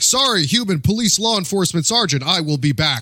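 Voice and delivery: stiff, stilted, awkward robot voice, high and loud. Making up a scene with awkward robot talk. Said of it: "awkward robot talk".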